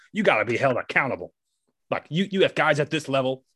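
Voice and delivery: play-acted heated rant, held in check, announcer-style yelling. Retelling a video where an announcer yells at the umpire: imitating Hawk Harrelson yelling. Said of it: "where he's just yelling at the umpire".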